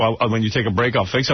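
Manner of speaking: derisive, mocking put-on voice. Repeating back what another speaker just said, mocking imitation of a coworker. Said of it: "You have to interrupt me to say".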